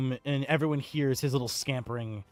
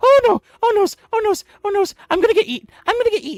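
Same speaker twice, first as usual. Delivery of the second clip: very high, very loud, rattled-off frantic goblin-like panic; 11 dB louder than usual. Voicing a goblin hiding behind Ghost, peeping out: goblin peeping in panic. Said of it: "hear him peep out and comment".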